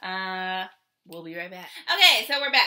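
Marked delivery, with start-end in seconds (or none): 1.9-2.7 loud, high-pitched yelling throughout. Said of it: "Why are you yelling?".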